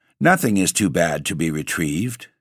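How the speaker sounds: ordinary delivery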